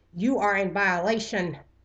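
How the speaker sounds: loud, metallic, screeching robot voice. Narrator reading an android's shout at a fleeing man, screeching robotic voice. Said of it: "A robotic voice screeched".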